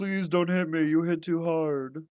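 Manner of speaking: mocking, high, wheedling whiny pleading. Teasing the listener by mimicking how he sounded: mocking impression of Haza. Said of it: "Is that what I sound like?".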